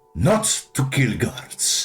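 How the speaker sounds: angry scolding tone. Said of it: "as he slams his fist onto the table".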